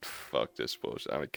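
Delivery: mock teen frustration. Speaker acting out a teen outgrowing Cartoon Network shows, mock fed-up teen. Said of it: "You're like".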